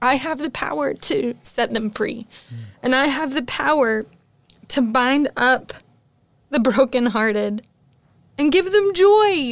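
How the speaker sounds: moved, heart-stirred, emotional preaching delivery. On a podcast, talking about hard truths about the church: emotional. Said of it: "I'm going to get emotional about this".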